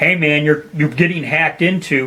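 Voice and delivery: ordinary delivery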